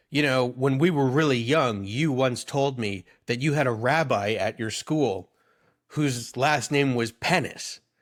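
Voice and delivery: ordinary talk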